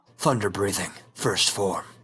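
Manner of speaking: very deep, heroic anime hero style voice. Describing how to voice Zenitsu, doing a deep Zenitsu voice. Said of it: "he's got that deep voice".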